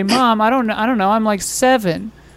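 plain

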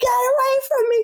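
mock shrieking, very high-pitched scream. Speaker retelling shouting at people who didn't care about spreading covid: retelling a scream. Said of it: "Because I'm like screaming".

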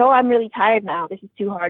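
plain

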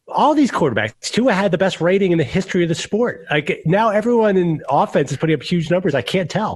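heated shouting, high pitch. Arguing about quarterbacks with another speaker: yelling. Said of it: "Why are you yelling at me?".

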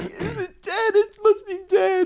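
tearful sobbing, very high, slow and drawn out. Retelling pulling over after a bird hit the windshield, imitating crying. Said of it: "crying on the side of the road".

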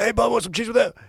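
squeaky, very high, damaged-throat voice. Telling others about a woman's husband, imitating how he talked: slashed-throat voice. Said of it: "He talked like this".

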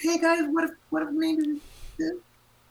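timid, very high little squeak. Musician acts out her own suggestions in pop sessions, squeaky voice. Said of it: "I'm more of a squeaky voice".

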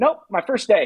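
mock bright, cheerful, high-pitched delivery. Recalling asking Jeff about horses in the first season, imitating Jeff, mock-cheerful. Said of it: "And Jeff just cheerfully goes".

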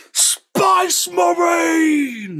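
shrill, very high Cockney yell, stretched out. Telling a story, the speaker gives the orcs' shout as one: cockney orc yell. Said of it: "the ones who don't have Cockney accents here, they yell it like that too".

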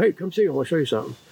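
imitated excited hollering. Retelling how someone called out across an aisle: imitating someone hollering excitedly. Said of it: "he hollered me, hollered down".

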